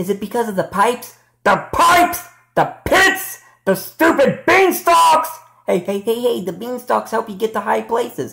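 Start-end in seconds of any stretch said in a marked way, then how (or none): 1.4-5.3 furious, worked-up, exclamatory angry outburst. Confronting the level designer about the level: angry. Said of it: "why are you so mad".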